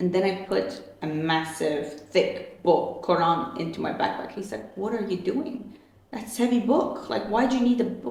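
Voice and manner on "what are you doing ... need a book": acted, startled, shocked dad voice. Retelling the father's reaction to packing a heavy book: imitating a shocked dad. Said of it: "my dad was shocked".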